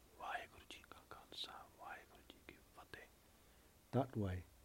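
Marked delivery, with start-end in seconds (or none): 0.2-3.1 gentle, very soft, breathy whisper. Retelling what a man said on entering a prison cell, in a very soft voice. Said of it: "he said in his own very soft voice".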